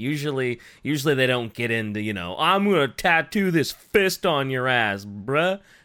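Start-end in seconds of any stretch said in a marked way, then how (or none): 2.4-5.6 put-on Southern country accent. Acting out tattoo artists' talk, the speaker uses a Southern country accent. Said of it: "you made them all sound like Southern country hicks".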